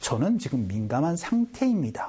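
normal talking voice

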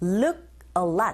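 "look" stressed hard, drawn out slowly.

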